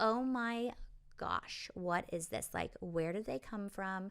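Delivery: very small, tiny, soft voice. Imitating a woman from a story: very tiny voice. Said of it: "She has a very, very tiny voice".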